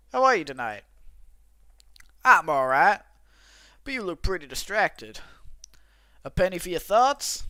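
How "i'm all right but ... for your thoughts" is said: put-on cowboy character voice. Voicing a game character's dialogue, in a cowboy voice. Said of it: "I'm just gonna give him a cowboy voice".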